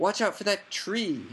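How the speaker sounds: high, bellowing cry at full lungs. In a plummeting car, a boy warns the other boy: bellowed. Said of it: "Harry bellowed".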